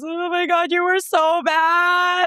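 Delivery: very high, very slow, hysterical tearful wail. Retelling what mom said after a nationals win, imitating mom in hysterical tears. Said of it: "in hysterical tears and she goes".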